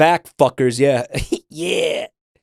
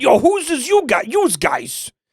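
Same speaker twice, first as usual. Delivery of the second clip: put-on New York accent, much higher, slower; 11 semitones higher than usual. Retelling how another player's character suddenly talked, imitating a new york accent. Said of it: "he became New Yorker. He went".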